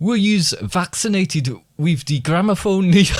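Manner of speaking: high-pitched German accent slipping in.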